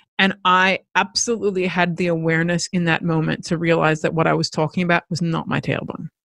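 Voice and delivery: ordinary delivery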